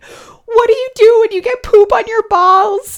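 mock frantic, flustered panic. Retelling a question put to Pat in the moment, retelling her own panicked question. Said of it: "I am panicking, and I'm so flustered. And I'm dead serious in the moment".

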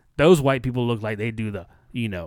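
ordinary talk, nothing marked

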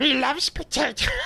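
botched put-on voice, very high and squeaky. Copying a line just said in a creature voice: bad Smeagol voice. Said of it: "that sucked".

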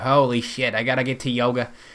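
Yiddish-inflected accent.

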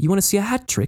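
put-on very high, posh upper-class British accent. Describing a game character, quoting the Sheriff in her very upper-class accent. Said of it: "she has like this very upper class accent".

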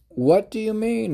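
very high, loud, insistent tone. A character demands an explanation from the one who just spoke, demanding. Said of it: "Ionushi demanded".

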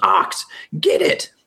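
high-pitched voice calling out. Voicing a character who yells to an ally to attack: yelling a command. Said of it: "And she yells".

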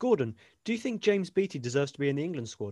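ordinary delivery

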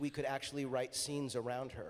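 normal talking voice

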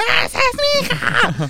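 acted shout. Recalling the final of a drag show she watched: retelling a shout. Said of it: "yo gritaba".

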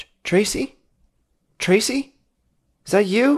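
faraway call, very high pitched. Voicing a caller heard over the phone: distant voice in the background. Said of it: "it sounds distant in the background".

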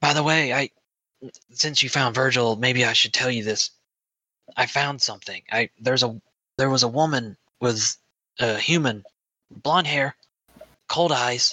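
whispered delivery. Voicing a character who grabs another aside and whispers news: whispering. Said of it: "and whispers".

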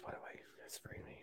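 soft, unvoiced whisper.

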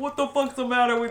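loud East Coast Italian-American voice. Talking about accents, doing a middle-aged East Coast Italian accent. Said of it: "I immediately go East Coast".

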